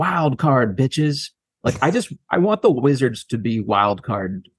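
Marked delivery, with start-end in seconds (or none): 0.0-1.3 acted, high-pitched hollered yell. Speaker describing a favorite It's Always Sunny episode, retelling Charlie Day's yell. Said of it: "he just yells".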